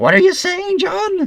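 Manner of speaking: goofy, very high, silly cartoon voice. Imagining editing a random CGI character into your old videos: funny CGI character voice. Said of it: "that's my C G I person voice".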